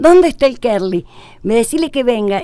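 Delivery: crying, half-yelled. Retelling a phone call from the speaker's mother, imitating mom crying and shouting. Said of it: "Llorando y gritándome un poco".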